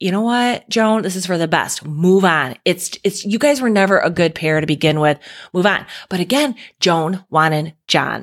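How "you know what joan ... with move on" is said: ordinary talk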